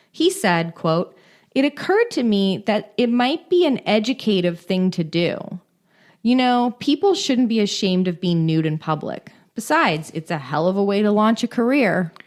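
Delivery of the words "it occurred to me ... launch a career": plain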